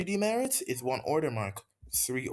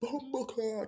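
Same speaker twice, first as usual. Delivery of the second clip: very high, hushed under-the-breath murmur; 10 semitones higher, 5 dB quieter than usual. Retelling a swear muttered under the breath in art class: imitating saying it very quietly. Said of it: "very quietly, like, that quiet".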